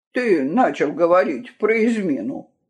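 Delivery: ordinary delivery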